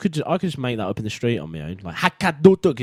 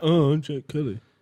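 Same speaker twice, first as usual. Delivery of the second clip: mocking put-on voice, higher pitch; 5 semitones higher than usual. Mimicking the other speaker right in front of them: mocking imitation of Jack Kelly. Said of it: "because I don't speak like that".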